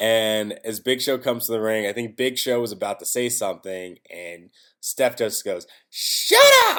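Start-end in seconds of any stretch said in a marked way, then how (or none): 5.9-6.8 very high, loud, belted woman's voice. Retelling Steph telling Big Show to shut up: Stephanie McMahon voice. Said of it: "I'm trying to do, like, a woman's voice".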